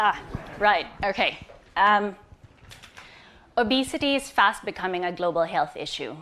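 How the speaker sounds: jittery, uncertain, nervous and hesitant start. Pitching a cauliflower rice product after apologizing for nerves: nervous. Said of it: "I'm a bit nervous".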